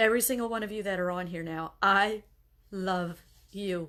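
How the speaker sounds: tearful, on the verge of crying, pushing through. Speaker tells everyone listening that they love them, holding back tears. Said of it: "I'm trying not to cry again".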